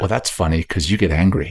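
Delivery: plain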